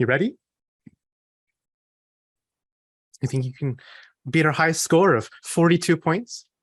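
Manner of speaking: gently spoken, sure of herself. Voicing a smiling woman holding up an hourglass: gently spoken, not whispered. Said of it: "but she gently says".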